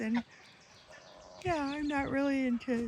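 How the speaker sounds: words pushed out mid-yawn. Talking about chickens in the morning, the speaker yawns mid-sentence: yawning while talking. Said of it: "excuse me, it's still morning here. I'm yawning".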